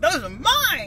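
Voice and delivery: put-on high, loud, greedy kid yell.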